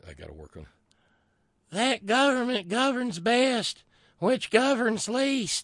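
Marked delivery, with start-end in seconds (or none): 1.7-5.6 thin, reedy voice, very high and very slow. Quoting the line Republicans like from Thomas Jefferson, attempt Thomas Jefferson in a high, thin, reedy voice. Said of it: "That's my attempt at a high, thin, reedy voice".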